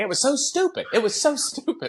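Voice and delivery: put-on British accent with voice pitched way up. Retelling what mom said about the accident: imitating mom's British accent. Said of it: "she's saying it in a British accent".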